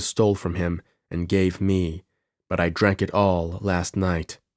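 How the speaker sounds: ordinary delivery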